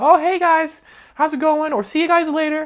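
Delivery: very high, eager-to-please, approval-seeking tone. Showing how they sometimes sound greeting people: higher-pitched approval-seeking voice. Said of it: "higher pitched and be like".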